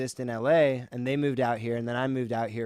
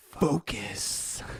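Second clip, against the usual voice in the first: hushed, nearly hidden whispered single word. Slipping a word in subliminally mid-sentence, whispered. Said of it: "Did you notice I whispered it?".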